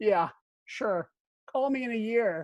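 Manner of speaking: put-on scornful, disparaging, slow, sarcastic, dismissive tone. Retelling own answer to an invitation to move to ireland: imitating own sarcastic reply. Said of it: "I was so sarcastic and disparaging".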